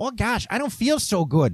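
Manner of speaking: high, cartoonish Midwestern accent. Retelling what a carsick passenger said during a drive: cartoonish midwestern mom accent. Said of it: "like a stereotypical cartoonish Midwestern mom accent".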